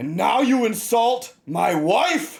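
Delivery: loud thundering voice. Voicing a creature holding a player overhead: booming voice. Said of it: "the voice just sort of boom out".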